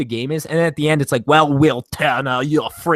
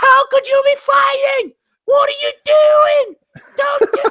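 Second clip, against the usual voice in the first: mock shrieking heroine voice, very high screaming; 4 dB louder than usual. Complaining about a movie sword fight, the speaker is imitating Keira Knightley screaming. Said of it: "Your your impression of uh".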